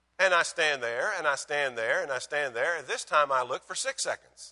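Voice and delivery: ordinary talk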